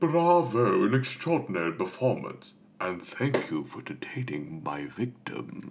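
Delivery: sing-song tiger voice with wide pitch swings. Discussing cartoon voice actors, quoting the tiger's line; Shere Khan voice. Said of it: "Shere Khan, the tiger".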